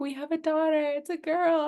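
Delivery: very high-pitched laughing through tears. Retelling what the husband said at the birth: imitating laugh crying. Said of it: "laugh crying".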